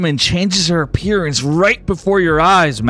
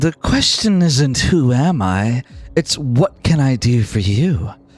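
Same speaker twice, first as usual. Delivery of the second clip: flirty feminine voice, lower; 4 semitones lower than usual. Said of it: "a flirtatious and feminine voice".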